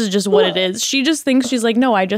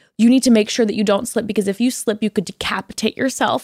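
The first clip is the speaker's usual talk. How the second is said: intense, put-on voice. Retelling mom's warnings on the escalator: imitating mom's intense warning. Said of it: "the most intense shit ever".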